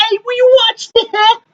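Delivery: very high-pitched, swaggering movie-star voice. Showing another speaker an impersonation: John Travolta impression. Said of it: "impersonation that I forgot that I have. Okay? It's, uh, John Travolta".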